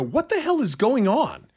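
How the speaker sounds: high, alarmed outburst, blurted. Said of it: "I said to Kelly, I go".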